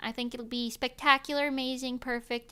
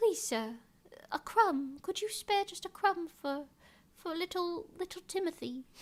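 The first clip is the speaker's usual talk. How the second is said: put-on pleading, high-pitched little British beggar boy voice; 7 semitones higher, 3 dB quieter than usual. Joking about the stereotypical beggar kid named Timothy: little British beggar boy voice.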